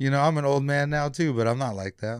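ordinary delivery

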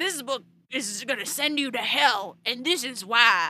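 Southern US accent, male voice.

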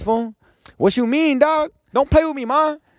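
put-on very high, loud Mexican accent. Recalling how he unconsciously talked after hanging out with Mexican friends; Mexican friends' accent. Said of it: "talked like this".

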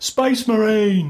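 put-on English-accented orc voice. Describing how the orcs all sound, doing their yell in an english orc accent. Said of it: "they all have English accents".

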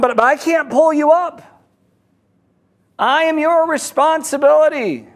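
yelling.

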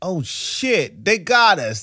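shocked, outraged outburst, high-pitched and loud.

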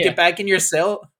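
plain

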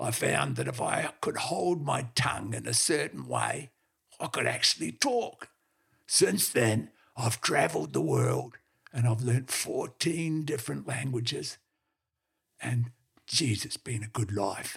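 strange, gruff dog voice.

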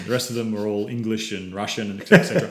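plain

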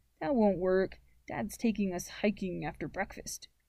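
ordinary delivery, nothing marked

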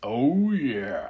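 deep, low-pitched mascot character voice. Recalling deep voices from childhood, the speaker imitates the Kool-Aid Man: deep Kool-Aid Man voice. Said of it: "that deep".

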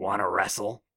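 low, rasping river-creature voice like a turtle. Narrating a story, a large turtle man from the river speaks: raspy voice. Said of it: "It says with a raspy voice".

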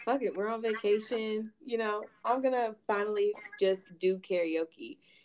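ordinary talk

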